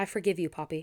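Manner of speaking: ordinary delivery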